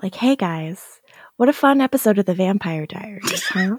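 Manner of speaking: public radio host voice. Co-hosts joking about their diction, one tries an NPR vibe: NPR radio voice. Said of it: "We should try to do like an NPR vibe".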